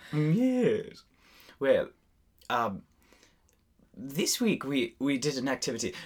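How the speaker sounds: put-on British accent. Two speakers are bantering in british accents; one moves the talk along: put-on british accent. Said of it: "Why are we talking in British accents?".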